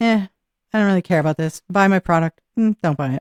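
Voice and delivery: apathetic, sarcastic, uncaring delivery. Showing the covid-era demo reel style: mock sarcastic don't-care read. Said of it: "There was a lot of sarcastic, weird humor".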